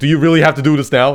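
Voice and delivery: loud, half-yelled delivery. Retelling a show scene where someone yells at people arguing: retelling a yell. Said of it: "Mern Mern kind of yells at them".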